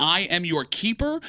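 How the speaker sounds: ordinary talk, nothing marked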